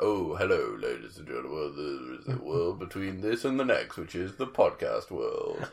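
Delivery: deep, low, hushed, soft narrator voice. A podcast host introduces the podcast as a Twilight Zone narrator, deep Rod Serling voice. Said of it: "if your voice goes much lower".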